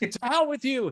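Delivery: very high, shrill, loud, acted-out scream. Retelling a movie scene where the chewing boss screams back: imitating a screaming boss. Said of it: "also screaming".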